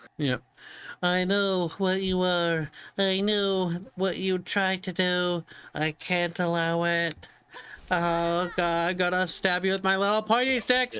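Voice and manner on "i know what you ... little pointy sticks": mock nerdy voice, pitched higher. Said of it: "That's a nerd voice now".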